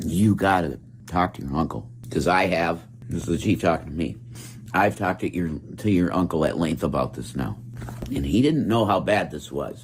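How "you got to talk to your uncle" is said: acted, hushed whisper. Retelling the chief talking to him about his uncle, retelling a whisper. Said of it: "he said it in a whisper".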